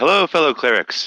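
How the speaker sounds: booming call, very high and very loud. A player's character greets a group of clerics in a very loud voice. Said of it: "in a very, very loud voice".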